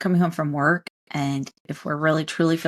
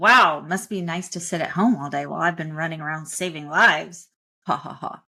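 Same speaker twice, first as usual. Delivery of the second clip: sarcastic, snide and dismissive. Acting out a self-important doctor coming home to a spouse: sarcastic and dismissive. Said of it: "being sarcastic and dismissive".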